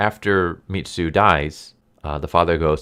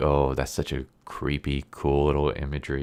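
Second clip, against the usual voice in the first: ordinary delivery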